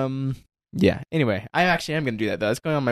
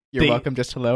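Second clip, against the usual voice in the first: plain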